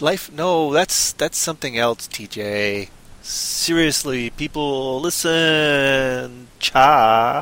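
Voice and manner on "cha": put-on California valley girl speech. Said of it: "California g-, Valley Girl voice now".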